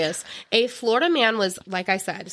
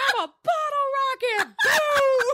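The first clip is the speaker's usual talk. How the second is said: very high, slow, drawn-out hollering. Telling a story about a man on the Fourth of July, imitating him yelling. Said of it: "going up and down the street yelling".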